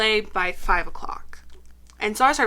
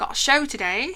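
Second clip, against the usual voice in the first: put-on British accent; 4 semitones higher than usual. Retelling what he thought on Halloween while feeling weird, in a British accent. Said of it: "[British accent]".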